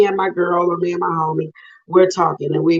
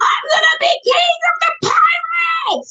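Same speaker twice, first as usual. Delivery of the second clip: very high, anime-style cartoon voice. Asked to show anime voiceovers, doing a Luffy voice. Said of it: "So with Luffy, it's like".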